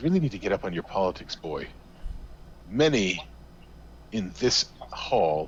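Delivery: openly scornful, sneering delivery. Game narrator voicing a man answering a question about devil worshipers, sneering. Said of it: "He sneers again".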